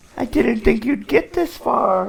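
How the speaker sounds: put-on very high, creaky, crackly old woman voice. Voicing the old woman at her farm: old woman character voice. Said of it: "says in the character's voice".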